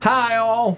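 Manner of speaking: very high, piped-up character voice. Trying an impression after being urged to: Carolina Chuck impression. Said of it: "I can't do Carolina Chuck".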